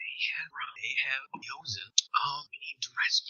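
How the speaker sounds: barely audible, very quiet hushed whisper. A player's character gathers his two best friends close, whispering very quietly. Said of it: "and I whisper very quietly".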